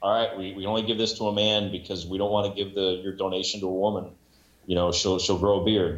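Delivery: ordinary talk, nothing marked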